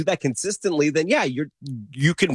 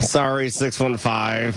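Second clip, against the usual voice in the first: grudging, spoken through gritted teeth; 3 semitones lower than usual. Apologizing to listener 615 about their team, through gritted teeth. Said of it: "I say that through my teeth".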